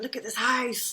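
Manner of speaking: acted-out excited exclaiming. Speaker retells showing her mum the new house, retelling own excitement. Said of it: "I was all excited".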